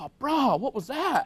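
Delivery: very drawn-out, slow, high surfer-dude drawl. Telling a joke, the slapped passenger complains: imitating a surfer dude. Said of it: "The surfer dude rolls down the window and goes".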